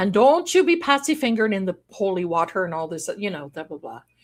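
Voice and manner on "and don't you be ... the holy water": put-on angry, hot-tempered old Irish brogue. Retelling what grandpa said when mad: imitating an angry Irish accent. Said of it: "all the old brazen accent would be coming out".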